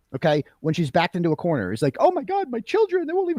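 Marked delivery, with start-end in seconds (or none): 1.9-3.3 very high, put-on tearful voice. Mocking the excuses Jennifer McCabe makes when cornered: mocking Jennifer McCabe tearfully. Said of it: "the same platitudes that Jennifer McCabe uses".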